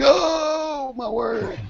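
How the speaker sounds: put-on very high old man voice, drawn-out oh. Voicing a laptop struggling with a Hangout: imitating an old man. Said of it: "Sound like an old man".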